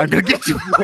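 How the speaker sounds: menacing voice, terrifying and threatening in tone. Repeating another speaker's Batman line, Batman voice. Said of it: "this Batman's even more terrifying".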